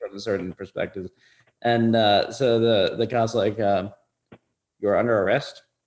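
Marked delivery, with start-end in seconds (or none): 4.8-5.6 put-on casual, offhand, tossed-off cop voice. Retelling how a cop told him he was arrested: imitating a cop's offhand tone. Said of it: "such a casual, like, not give a fuck way".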